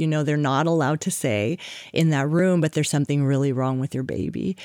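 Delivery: plain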